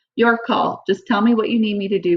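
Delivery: ordinary delivery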